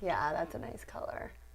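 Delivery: soft, low whispered aside.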